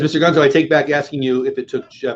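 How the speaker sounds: plain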